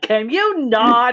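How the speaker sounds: loud, high shouting. Yorga walks out and yells to a god in the sky, yelling up at the sky. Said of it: "as if she's yelling to a god".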